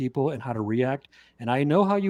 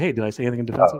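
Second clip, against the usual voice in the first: mock-sarcastic retort tone; 4 semitones lower than usual. Speaker retells what they said to him after not being defensive: retelling a sarcastic remark. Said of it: "I was like sarcastically".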